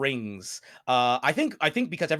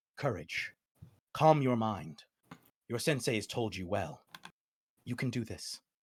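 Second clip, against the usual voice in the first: tranquil, soft, soothing, serene calm voice; 3 semitones lower, 5 dB quieter than usual. Game narrator voices a voice heard in the player's mind, serene calm voice. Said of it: "you hear a serene voice once again saying".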